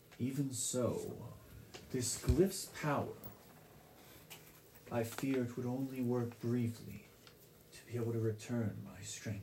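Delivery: soft, weakened serpent voice, strength fading. Narrating a game, voicing the water serpent around the player's neck: Aetherflow serpent voice. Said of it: "As the water serpent around your neck looks towards you and says, ... I am [name]. I am a protector of this land. But I've been weakened until now".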